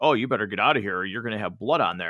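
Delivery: calm, cool, calculated and controlled tone. Retelling a Batman scene where he knocks on the club door: imitating calm, cool Batman; mock calm, calculated put-on voice. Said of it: "so calm and cool and calculated".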